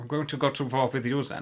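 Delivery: very camp, exaggerated German accent. Narrating wartime history, voicing Hitler's reply in a camp German accent. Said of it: "in his very camp German accent".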